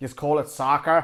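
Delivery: poor, bad fake put-on Australian accent. Speaker reviewing an england match teases australian viewers, in a poor australian accent impression. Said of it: "that was my poor impression of Australia".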